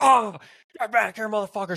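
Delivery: mock all-out screaming, high and shrill. Retelling what she yelled with her arm caught in the window: imitating someone screaming. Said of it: "screaming at me".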